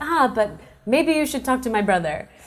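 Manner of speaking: put-on thick French accent. Retelling what a man in the room said to her, in a thick French accent. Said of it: "In a very thick French accent".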